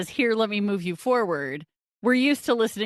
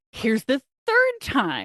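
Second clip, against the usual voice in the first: voice raised a notch, pressing and animated; 3 semitones higher than usual. Describing something that keeps showing up in life, the speaker voices it, imitating a raised voice. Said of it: "I'm raising my voice".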